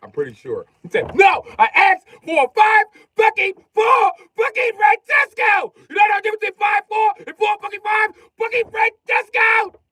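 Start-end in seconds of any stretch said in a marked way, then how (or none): 1.1-9.7 shrill, high, loud, exploding, furious rant. Speaker retells a man going off at another man, imitating an angry rant. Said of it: "Dog used to go off".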